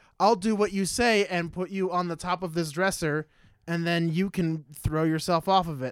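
plain

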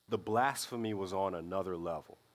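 ordinary talk, nothing marked

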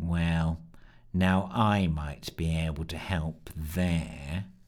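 very low, slow, boring, dreary drone. A newcomer slinks up to the fireside group and speaks: dreary, boring voice. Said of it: "came a dreary, boring voice".

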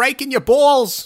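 high, loud, ranting voice done as an impression. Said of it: "What does that guy sound like anyway?".

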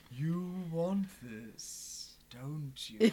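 put-on villainous, wicked old emperor voice. Joking about saying things in bed, the speaker offers a line in Palpatine voice. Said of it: "we started doing like Palpatine voice".

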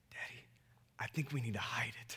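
hushed, conspiratorial, plotting whisper. Retelling his daughter's reply about hiding the bracelet, retelling a strategic whisper. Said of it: "and in a whisper, very strategically".

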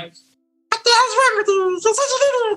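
very high, squeaky cartoon mouse voice.

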